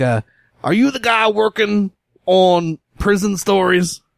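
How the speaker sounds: blaring, rough voice. Imitating a man she is describing, in a loud, rough voice. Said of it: "but really kind of loud".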